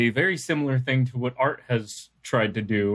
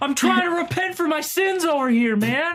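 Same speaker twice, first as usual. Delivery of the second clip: very high, shrill yelling heard through a wall. Someone banging behind a prison wall starts yelling: yelling through the wall. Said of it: "someone starts yelling".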